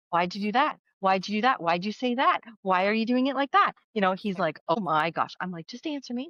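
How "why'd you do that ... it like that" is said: put-on mimicked pestering two-year-old voice. Recalling asking him a million questions about his technique, retell your toddler-like pestering questions. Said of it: "I was like a two year old".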